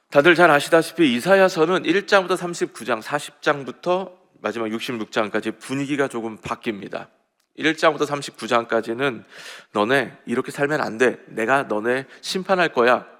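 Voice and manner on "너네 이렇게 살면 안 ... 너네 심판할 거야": plain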